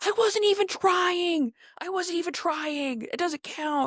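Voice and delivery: acted-out, furious, high-pitched angry screaming. Describing a circulating video of Justin and Haley at an arcade: retelling Justin's angry yell. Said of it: "screams, yells at her".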